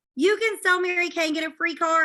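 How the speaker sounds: high, loud, thrilled excited scream. Speaker retells overhearing a talk with her mom and screaming out; retelling a scream. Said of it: "And I screamed".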